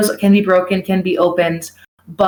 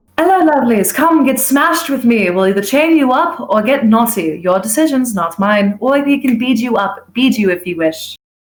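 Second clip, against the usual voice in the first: fair barker character voice, hawking style; 4 semitones higher than usual. Showing the pitch given to fair customers: put-on Ren Fair vendor voice. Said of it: "let me get into my voice real quick".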